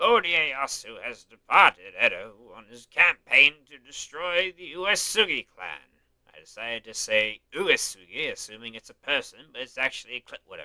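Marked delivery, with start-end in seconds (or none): 0.0-6.0 put-on slow, deliberate, measured old man's voice. Reading an old man's lines aloud: old man voice. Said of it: "old man voice".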